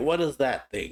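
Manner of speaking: normal talking voice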